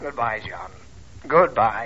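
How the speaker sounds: low, gloomy, utterly hopeless, despairing. A father made to go to the movies says goodbye, with suicidal-sounding gloom. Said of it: "if I ever heard a suicidal note in a man's voice".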